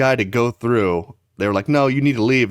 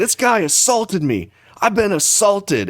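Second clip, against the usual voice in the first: high, top-of-the-lungs screaming yell; 9 semitones higher than usual. Retelling an airport fight, imitating a man screaming about assault. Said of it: "screaming assault at the top of his lungs".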